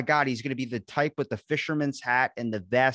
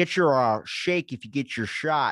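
imitated mocking, taunting delivery. Retelling how a man on screen says his line, mocking someone's taunt. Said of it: "the way he does it is like so mockingly".

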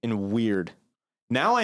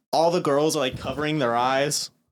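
ordinary delivery

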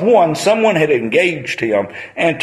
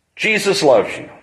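mild, called-out street preacher voice; 3 semitones higher than usual. Retelling how a man on the street calls out: imitating someone yelling. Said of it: "He will yell out".

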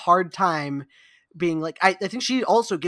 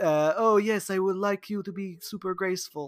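put-on old-world vampire nobleman voice; 5 dB quieter than usual. Imitating a chain-smoking film director giving a note, in a Count Dracula voice. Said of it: "That was Count Dracula in the studio".

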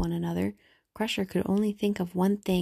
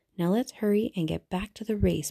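ordinary delivery

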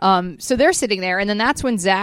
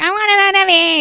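put-on bratty whining, very high and loud; 11 semitones higher, 5 dB louder than usual. Retelling how a girl throws a tantrum: imitating a tantrum. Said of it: "She throws a tantrum".

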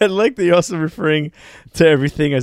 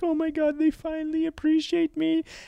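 very high, tearful, weeping voice; 13 semitones higher, 7 dB quieter than usual. Retelling how she read reviews of her performance, imitating someone crying. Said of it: "and she was crying, being like".

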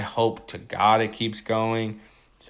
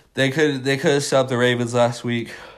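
talking through a yawn; 3 semitones higher, 4 dB louder than usual. Talking fantasy football, caught yawning mid-sentence: yawning. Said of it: "I'm sorry, I'm yawning".

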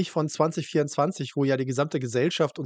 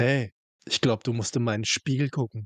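faintly suggestive, slightly lascivious come-on tone; 3 semitones lower than usual. Speaker quotes a woman's remark to a man, retelling a slightly lascivious tone. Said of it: "also immer mal so einem leicht lassiven Unterton".

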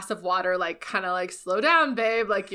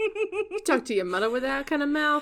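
clumsy, bad Jersey Italian accent, pitched up; 7 semitones higher than usual. Trying the line again in a bad Italian Jersey accent. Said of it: "okay, see?".

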